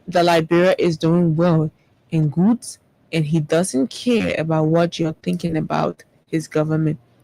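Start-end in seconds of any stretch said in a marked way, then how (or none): none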